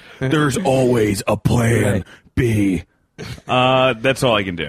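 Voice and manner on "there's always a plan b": put-on wrestler voice, whispery. Doing an impression of a wrestler after being asked: whispering Triple H impression. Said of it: "You can do whisper Triple H".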